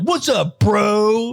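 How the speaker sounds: put-on bro voice. Imitating a bro coming in: imitating a bro. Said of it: "like a bro coming in and be like".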